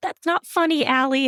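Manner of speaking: put-on very high-pitched small-child voice. Speaker retelling their reply to allie, who laughed at them, in a little kid voice. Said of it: "in that little kid voice".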